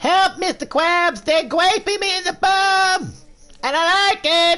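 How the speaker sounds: very high, loud, squeaky, with bum stretched out. Speaker trying out a SpongeBob voice after losing their voice this year. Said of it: "my SpongeBob voice".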